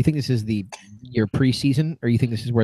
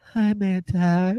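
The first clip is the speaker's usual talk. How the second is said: higher-pitched put-on woman's voice; 7 semitones higher than usual. Picturing another panelist faking a phone call: imitating a woman's voice. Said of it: "your best woman impression".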